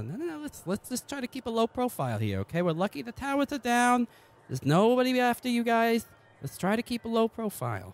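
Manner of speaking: very high-pitched, hushed, urgent voice.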